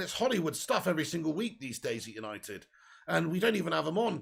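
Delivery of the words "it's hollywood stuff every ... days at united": ordinary talk, nothing marked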